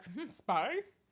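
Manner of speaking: clumsy, bad, put-on European accent. Acting out a suspicious target catching a spy: bad european accent. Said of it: "That was a European accent".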